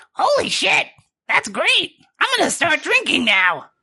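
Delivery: excited put-on character voice. Voicing little Timmy after drinking the potion: excited little Timmy voice. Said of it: "and he's just like".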